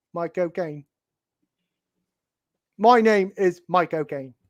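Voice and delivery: name pronounced with a put-on British accent. Explaining a name joke, saying the name British-style, British accent, as Michael Caine. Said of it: "When you say his name British".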